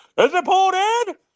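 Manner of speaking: very high ballpark announcer call. Recalling the announcer's call at the game: imitating the announcer's call. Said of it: "I can hear his voice going".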